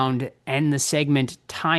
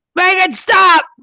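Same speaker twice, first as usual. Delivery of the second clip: put-on panicked scream, higher and louder; 8 dB louder than usual. Answering a trivia question with an impression: screaming Tom Atkins impression. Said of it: "Whoever screams it out first".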